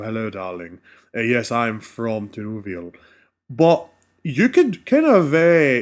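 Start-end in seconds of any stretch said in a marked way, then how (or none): 0.0-2.9 low, soft, stately, refined regal elf voice. Showing how elves usually sound in fantasy depictions: regal elf voice. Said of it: "They always sound a lot more regal".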